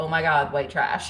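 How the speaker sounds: normal talking voice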